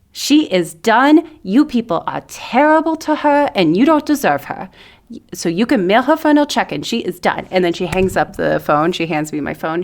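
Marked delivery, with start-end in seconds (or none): 0.2-7.5 put-on very strong Brooklyn Italian accent, pitched up. Speaker retells her friend's mom telling off the employer, in a brooklyn italian accent. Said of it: "who is like very Italian and very Brooklyn".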